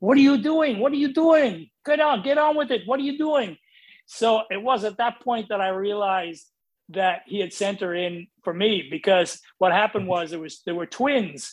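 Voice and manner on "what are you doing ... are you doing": high-pitched, put-on Portuguese-accented English. Retelling what a man said looking into the room an hour later, Portuguese accent. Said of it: "his Portuguese accent".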